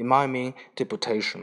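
ordinary delivery, nothing marked

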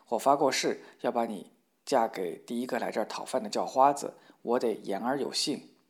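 plain

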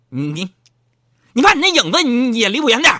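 angry, irate, stammering scold with rising pitch. The speaker retells how their wife scolded them, imitating an angry wife. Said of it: "我媳妇就非常生气了".

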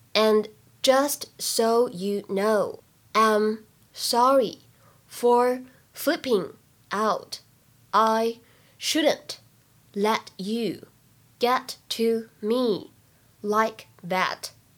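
very slow, careful, word-by-word model reading.

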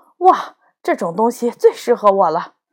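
plain reading voice

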